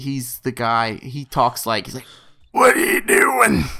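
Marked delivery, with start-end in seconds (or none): 2.5-3.6 dry, very high, raspy, parched croak. Showing how a movie captain with a very distinctive voice talks, in a Captain Ripley voice needing water. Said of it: "I wish someone would have just got him some water".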